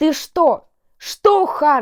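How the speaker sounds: full-on loud, angry yelling. Narrator reads her own line in an argument while others watch, shouting even louder. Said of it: "Кричу я еще громче".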